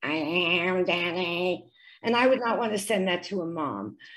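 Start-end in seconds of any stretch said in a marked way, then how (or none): 0.0-1.6 mechanical, low, flat robotic monotone. Showing how a recording with an electrical sound source sounds, robot-like voice. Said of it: "he sounds like a robot. It sounds like".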